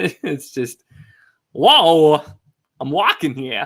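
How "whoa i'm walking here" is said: booming, slow and deliberate delivery. Showing the voice you use to read kids' books, recorded by your wife: Christopher Walken voice. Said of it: "in my Christopher Walken voice".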